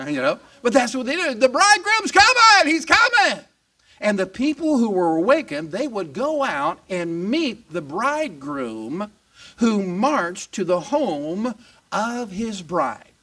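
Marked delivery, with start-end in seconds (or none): 1.3-3.4 put-on very high, loud shout with Southern accent. Acting out people announcing the bridegroom's arrival, shouting in a southern accent. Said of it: "you didn't know they all had southern accents".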